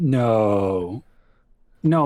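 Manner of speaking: sarcastic, pretend-surprised tone. Reacting to another speaker's story about getting angry, sarcastic mock surprise. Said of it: "that sounded sarcastic and like I was pretending".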